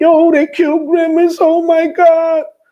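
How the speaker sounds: mock very high, tearful sobbing wail. Speaker retelling a caller's news on the phone, imitating emotional crying. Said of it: "with an emotional crying".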